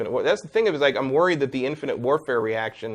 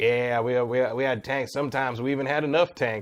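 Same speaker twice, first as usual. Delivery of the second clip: put-on narrator voice with a Southern accent. Describing a video game's opening tank scene, Battlefield 1 southern narrator impression. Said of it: "narrator with like a southern accent going like".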